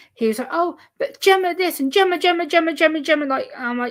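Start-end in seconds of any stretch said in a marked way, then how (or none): 0.5-3.3 play-acted loud, high, raised voice, going on and on. Retelling how a cousin talked at them: imitating cousin talking loud. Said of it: "talking loud at me".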